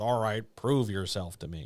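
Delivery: normal talking voice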